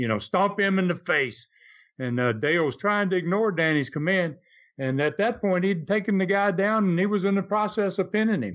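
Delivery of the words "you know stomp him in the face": mock scream, pitched higher. Telling a wrestling story, the speaker acts out Danny screaming at Dale, retelling a scream. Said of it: "he's screaming at Dale now".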